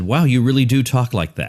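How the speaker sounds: ordinary delivery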